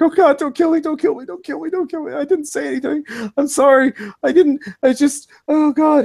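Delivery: very high, crying, sobbing, panicked, desperate. Narrating a game scene, voicing a pinned man; crying, panicked begging. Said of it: "he's crying. He's like".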